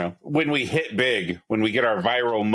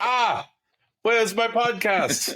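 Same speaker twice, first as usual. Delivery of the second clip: very high-pitched, put-on Norwegian accent; 12 semitones higher than usual. Imitating a person in Norway who is waiting for the show: Norwegian accent impression. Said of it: "That was my Norwegian accent".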